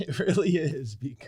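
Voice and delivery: laughing while speaking. Answering another speaker's point, giggling while talking. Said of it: "Why are you so giggly?".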